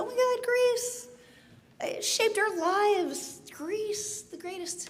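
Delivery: high, breathless, gushing fangirl voice.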